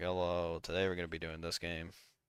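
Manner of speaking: dull, lifeless, flat, depressed monotone. Speaker mimicking how they sound when recording, mock-depressed delivery. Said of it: "I just sound depressed every single time".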